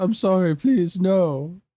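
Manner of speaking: high, tearful, fake sobbing voice. Reading a meme caption aloud where BMO begs: mock crying. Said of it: "B M O crying says".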